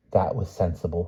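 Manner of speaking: ordinary delivery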